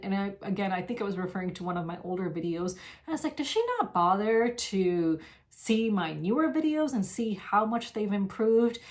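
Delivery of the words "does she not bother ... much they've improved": ordinary talk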